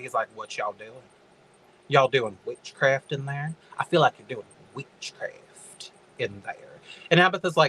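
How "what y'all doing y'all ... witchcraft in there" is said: put-on creepy old man voice. Recapping a story, speaker acts out Ansel calling from outside: Ansel voice. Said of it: "being the creepy old man that he is".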